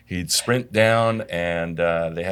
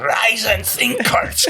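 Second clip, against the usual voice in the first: put-on Hungarian accent, higher and louder; 5 dB louder than usual. Retelling a saying someone used to repeat: imitating a Hungarian accent. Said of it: "with his, uh, Hungarian accent".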